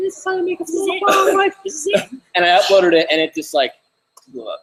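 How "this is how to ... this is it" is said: very high, thin, squeaky voice. Recalling the first video made in the backyard, the speaker imitates the squeaky voice. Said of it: "I'm like this squeaky voice".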